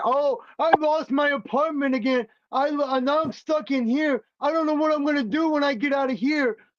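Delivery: acted-out whiny crybaby blubbering, like a little baby. Venting about a man over there, mocking him crying like a little baby. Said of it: "crying like a little baby".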